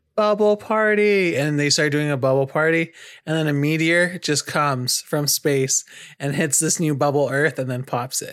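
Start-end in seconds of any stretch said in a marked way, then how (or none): 0.1-1.3 sweet, cute, high-pitched little cheer. Imagining a king shouting to the whole world, in a cute shouting voice. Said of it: "I imagine it being a cute voice".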